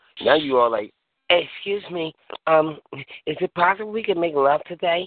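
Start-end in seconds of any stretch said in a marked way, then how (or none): 1.3-5.1 timid, meek, hesitant, tamed tone. Acting out a tamed man asking politely: imitating a timid, tamed man. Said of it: "they know they got you tamed".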